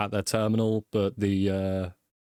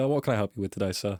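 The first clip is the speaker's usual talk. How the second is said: bored, uninterested, disinterested tone. Voicing a receptionist greeting a player: disinterested receptionist voice. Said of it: "she kinda says, like, disinterested".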